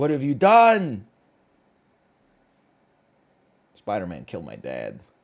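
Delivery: put-on anguished movie character voice. Retelling how people reacted to a disappointing movie: Harry Osborn voice from Spider-Man. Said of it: "it's the Harry Osborn voice from Spider-Man".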